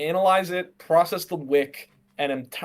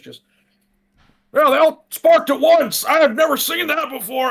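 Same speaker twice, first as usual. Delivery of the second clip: raised, harsh, very high, hard-to-place call; 10 semitones higher, 8 dB louder than usual. Calling out generically during a game, in a raised harsh voice. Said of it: "I'm gonna raise my voice a little bit so it sounds kind of harsh".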